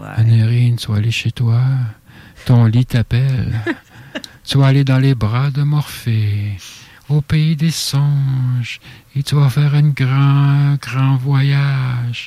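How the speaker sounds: sensual, seductive, sultry voice. Trying another voice after being told theirs sounds robotic: more sensual voice. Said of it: "je vais prendre une voix plus sensuelle".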